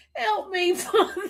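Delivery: high, laughing, pleading tone. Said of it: "know why I'm laughing".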